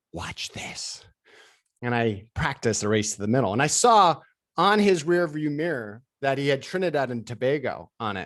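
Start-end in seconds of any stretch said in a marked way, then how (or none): 0.1-1.0 hushed whispered aside. Retelling a whispered reply to a buddy in the car: retelling own whisper. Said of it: "all I did was whisper back".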